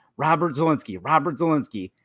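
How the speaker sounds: usual speaking voice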